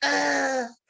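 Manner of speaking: high-pitched, loud, panicked crying. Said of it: "like, pure".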